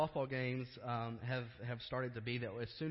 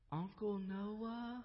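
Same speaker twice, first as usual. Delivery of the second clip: put-on small, tiny, sweet, high little-girl voice; 8 semitones higher, 4 dB quieter than usual. Retelling a phone call, voicing the caller: imitating a tiny, sweet voice. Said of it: "this tiny, sweet voice say".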